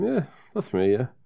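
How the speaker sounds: put-on chuckling through the words, amused. Retelling a tracked-down musician's reply to the label guys: imitating laughing while talking. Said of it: "laughing, going".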